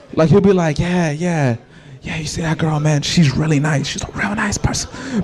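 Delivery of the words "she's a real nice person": breathy, hushed, very soft whisper. Imitating someone who says the nice part about people quietly: said quietly. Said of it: "he will whisper the nice part he says about people".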